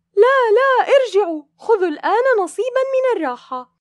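shrill, very high-pitched, loud shout. A mother calls after her children running back toward the water: crying out. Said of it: "فصاحت الأم دون تردد".

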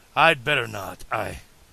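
plain reading voice

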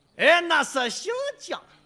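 put-on Shandong dialect accent, zhang said as jiang. Showing how someone from Shandong would say it, Shandong accent. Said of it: "山东人一说，".

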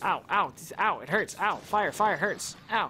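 joking, slow, put-on ows of hurt and pain. Streaming a game while things blow up, the player lets out mock pain cries. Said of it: "I'm kidding, it doesn't actually hurt".

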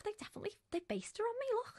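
high, soft, squeaky excited voice.

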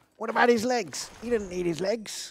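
tiny, high, squeaky little rat creature voice. Asking the others whether the goblin voice works for rats: goblin voice as rat man. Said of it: "can I still use my goblin voice for rats? ... a little rat man goes".

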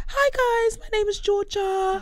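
very high, dainty speaking voice. Imitating how Georgia speaks, Georgia voice, very high and soft. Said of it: "Georgia speaks very high and very soft. So she's like".

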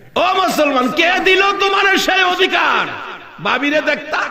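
high, rebuking shout.

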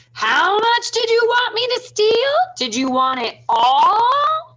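very high, loud, shrill yell, all drawn out. Tom, inside the mayor's house, calls out to the robbers, in his loudest voice. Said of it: "called out to the robbers in his loudest voice".

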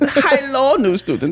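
put-on high, German-sounding accent, half Russian. Acting out Doctor Xavier speaking for the first time: German-sounding Doctor Xavier accent. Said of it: "it was still an accent".

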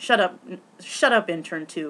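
ordinary talk

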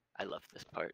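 soft, quiet mutter under the breath. Voicing a smirking character as others drink potions, muttering under his breath. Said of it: "he says under his breath".

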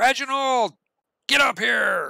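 drawn-out, slow, high-pitched yell. Voicing a character calling someone to the phone: yelling. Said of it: "he yells".

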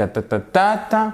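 high, even French rhythm on "ta ta ta ta ta". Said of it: "ça c'est notre rythme".

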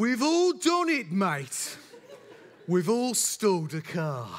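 put-on thick Birmingham accent, friendly and reassuring. Retelling what a driver said after a stalled car: broad Birmingham accent. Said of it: "broad Birmingham accent. I'm going to do it".

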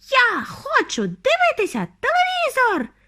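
very high, swooping, squeaky little tantrum squeal. Narrator reads a boy's line during his tantrum, squeaking. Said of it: "пищав він".

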